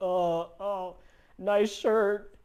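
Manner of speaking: shy, halting stutter with voice cracking. Showing how a very shy beginner might sound the first time, shy stuttering. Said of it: "you might be stuttering".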